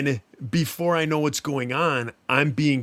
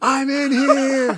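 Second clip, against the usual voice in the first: imitated full-volume scream, higher and louder; 12 semitones higher, 6 dB louder than usual. Retelling pounding on the bunk ceiling in a dream: retelling a scream. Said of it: "I'm screaming at the top of my lungs".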